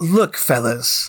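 treacherous-sounding voice. Turning to the group while lying through his teeth: tone of someone about to betray. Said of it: "That's the tone of someone who's about to betray us".

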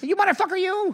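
very high-pitched voice. Trying a longer line of the same impression: Joe Pesci impression. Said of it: "it's like that".

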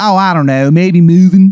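bad Baltimore accent. Playing a character offering a favor: bad Baltimore accent. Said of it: "he doesn't know how to do the accent".

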